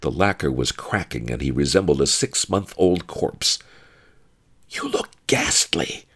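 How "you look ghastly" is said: hushed whisper. Narrating a story, voice the first-person narrator's remark to another character: whispered. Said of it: "I whispered".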